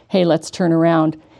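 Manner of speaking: normal talking voice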